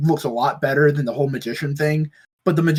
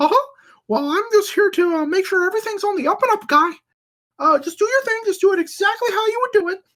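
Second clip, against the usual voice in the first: very high, pitched-up cartoon mouse voice. Retelling a video where a character bursts through a wall: Mickey Mouse voice. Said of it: "Mickey Mouse comes up and goes like".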